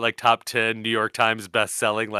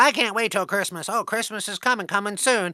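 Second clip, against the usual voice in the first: put-on cartoon mouse voice, higher; 10 semitones higher than usual. Imagining a house mouse as a cartoon character: Disney cartoon mouse voice. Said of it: "He's like".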